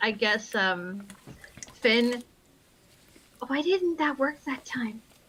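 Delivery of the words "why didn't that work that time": whispering, faster. In a tabletop game, a player's character whispers a question to another character. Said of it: "she whispers to".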